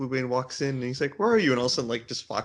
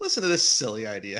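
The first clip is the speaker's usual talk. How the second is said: disdainful, sneering, contemptuous tone; 3 semitones lower than usual. Picturing Glockpod's reaction to the group's plan, imitating Glockpod's contempt. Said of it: "picture the contempt in Glockpod's voice".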